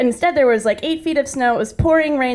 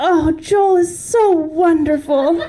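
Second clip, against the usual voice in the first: dreamy, faraway gushing tone, pitched up; 6 semitones higher than usual. Retelling what a woman at the park rink said, imitating a woman's dreamy voice. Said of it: "said with a dreamy voice".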